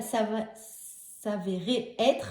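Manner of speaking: stumbling over s'avérer, restarting the syllable.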